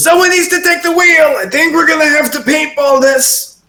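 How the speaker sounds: very high-pitched shout over loud noise. A game master voicing Kenini shouting over the others, Kenini shouting. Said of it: "you hear Kenini shouting over top of you".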